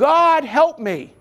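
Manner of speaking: high, slow, loud yell.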